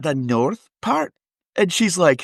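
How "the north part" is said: fake, put-on Scottish accent. Retelling meeting a friend's mother while pretending to be Scottish: put-on Scottish accent. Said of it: "I know that accent".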